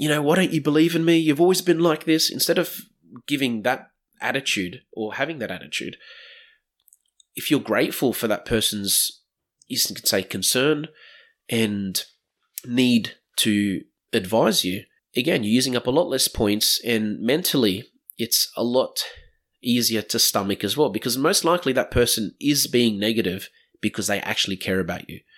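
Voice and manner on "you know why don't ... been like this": high, loud defensive tone. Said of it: "getting all defensive".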